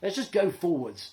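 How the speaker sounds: ordinary delivery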